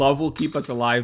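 ordinary delivery

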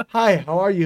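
detached line reading that sounds dubbed, not live. Mocking how everything in the movie sounds dubbed: Tommy Wiseau impression. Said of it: "sound like Tommy Wiseau was dubbed".

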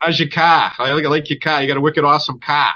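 strong Boston accent. Showing how people talk where the speaker grew up: Boston accent. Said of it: "And that's how we talk".

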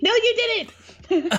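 very high, screamed delivery. Retelling screaming at the tv during a show: imitating own past scream. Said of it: "I screamed at the T V".

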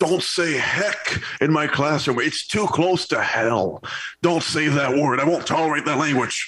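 stern, slow, frightening, scary scolding tone. Retelling a grade-three teacher's scolding: imitating a scary teacher. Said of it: "Did she say it in that tone? Sounds pretty scary".

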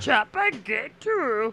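put-on wise-sounding old alien creature voice. Taking turns trying voices with the others, doing a Yoda impression. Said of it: "You do a pretty good Yoda".

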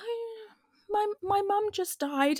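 put-on well-mannered Scottish accent, very high. Imitating a poor little scottish girl politely telling her news: politely imitating a scottish girl. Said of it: "politely being like".

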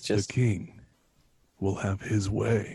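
seductive voice. Joking about making love to Burger King: sultry voice. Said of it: "I don't mind the sultry voice".

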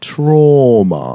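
put-on British accent with trauma stretched long. Retelling saying a word within earshot of ladies, British accent on trauma. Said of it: "I just wanted to say trauma in a British accent".

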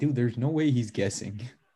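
ordinary delivery

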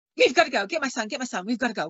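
put-on frightened, agitated voice. Retelling what a woman said rushing back in after a thump, retelling agitated fear. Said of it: "she was really agitated and in fear".

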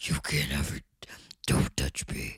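whispered caped-hero voice. Asked to do your own version, answering in a Batman voice. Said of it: "That was my Batman".

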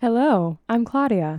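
mechanical, robotic voice, a bit high. Introducing herself right after the host names her; robotic voice. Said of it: "It was robotic".

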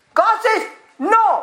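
full-on, high-pitched, screaming delivery. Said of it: "I don't know why I'm screaming".

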